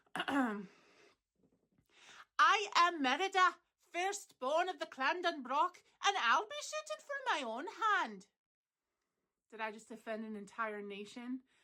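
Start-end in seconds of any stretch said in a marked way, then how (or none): 0.2-8.3 put-on Scottish accent, high and sing-song. Showing the audience an accent, doing a put-on Scottish accent. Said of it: "I'm going to do my Scottish accent".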